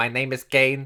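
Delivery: put-on voice like a neck speech device. A wrestling podcast host, saying he sounds like Kane, does Kane's neck-device voice. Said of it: "when he needed that wee thing to put on his neck".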